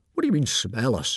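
ordinary delivery

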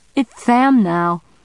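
cracking, wobbly voice, lisped s. A costumed kid answers a question, voice cracking with a lisp.

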